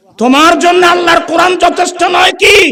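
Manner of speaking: angry, reproachful tone.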